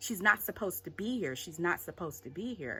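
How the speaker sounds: plain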